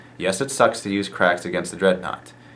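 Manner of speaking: usual speaking voice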